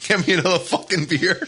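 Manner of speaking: New York style speech. Retelling how Bush talks in the bit: New York accent as Bush. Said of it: "He gets this New York".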